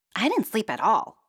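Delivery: cranky, grumpy, grumbling, griping complaint. A sleepless princess answers the queen at breakfast, griping. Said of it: "Princess griped".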